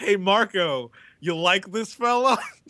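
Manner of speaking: put-on thick, heavy Spanish accent. Imitating a driver in the cafeteria: Carmen Jordan thick Spanish accent. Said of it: "in her thick Spanish accent".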